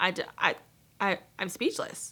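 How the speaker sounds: stuttering, stammering, tripping over words. Reacting after first reading a passage in Covey's book, stuttering. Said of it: "([name] stutters)".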